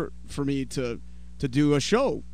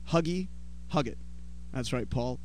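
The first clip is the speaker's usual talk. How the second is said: ordinary talk, nothing marked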